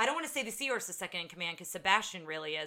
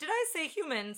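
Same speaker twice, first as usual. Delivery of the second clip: put-on nervous character voice, higher pitch; 10 semitones higher than usual. Retelling a film scene where a character panics: imitating nervous Sebastian. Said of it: "He's so nervous".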